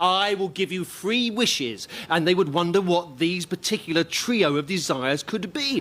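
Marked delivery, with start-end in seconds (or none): 0.0-1.9 troll-like creature voice, calling out. Speaker acts out a troll under a bridge calling up to travellers, troll voice. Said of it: "hear the troll-like voice from underneath going".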